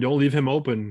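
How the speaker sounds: plain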